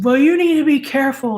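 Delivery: put-on annoyed tone. Retelling how he told the speaker off after his car was hit: retelling a scolding. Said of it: "And he told me off".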